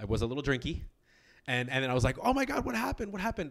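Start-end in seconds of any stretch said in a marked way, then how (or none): 2.2-3.5 mock frantic, very high, panicked babble. Retelling seeing a dancer hurt her shoulder: retelling own panicked reaction. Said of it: "freaking out".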